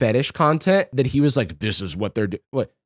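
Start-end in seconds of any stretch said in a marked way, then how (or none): 1.6-2.4 very deep, low, soft, hushed voice. Telling others what a man was saying about some content, in a deep Jordan Peterson voice. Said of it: "You did a deep Peterson".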